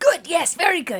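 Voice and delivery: high, loud, delighted voice.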